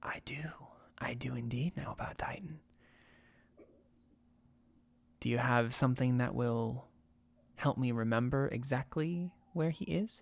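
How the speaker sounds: very quiet, close-in, seductive sultry whisper. Game master voicing a waitress leaning close to a player, sultry whisper. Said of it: "close and whispers in your ear".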